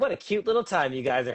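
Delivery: condescending, talking-down, patronizing cutesy tone. Repeating their own earlier remark after being told it sounded patronizing, mock-patronizing tone.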